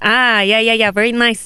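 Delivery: put-on Malaysian accent. Retelling a reply to a friend's teasing: own put-on Malaysian accent. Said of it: "let me sound a bit more Malaysian for you".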